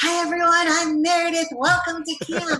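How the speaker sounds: mock eager, very high, loud and excited. Retelling greeting kids on the bus, first camp day: imitating her own excited greeting. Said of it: "very excited".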